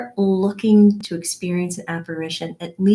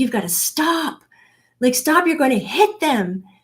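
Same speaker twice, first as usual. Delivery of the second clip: put-on urgent, alarmed shout, high and panicked; 5 semitones higher than usual. Recounting a near collision, the speaker retells yelling at the husband, retelling a panicked yell. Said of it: "I'm yelling".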